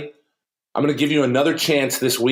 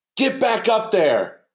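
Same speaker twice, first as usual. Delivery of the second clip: put-on echoing booming bellow, big and high; 9 semitones higher than usual. Pitcher recalls the coach shouting from the dugout after strike one, imitating Coach Everson's booming yell. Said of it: "this booming, echoing voice".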